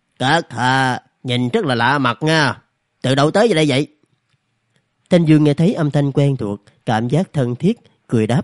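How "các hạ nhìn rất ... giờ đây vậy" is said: absent-minded, distracted, much slower. A male goat glances at a newcomer and addresses him, absent-mindedly. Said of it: "cất cái giọng lơ đãng".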